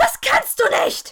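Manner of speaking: piercing, very high, very loud shriek. A woman lying in the snow before the narrator, shrieking. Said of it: "kreischte sie schließlich".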